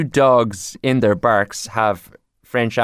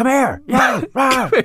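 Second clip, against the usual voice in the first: put-on very high, mad yapping dog voice, Irish accent; 14 semitones higher than usual. Joking that local dogs sound irish, imitating one: imitating a dog sounding mad irish. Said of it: "all the dogs here do sound mad Irish".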